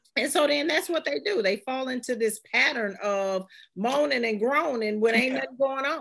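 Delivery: ordinary talk, nothing marked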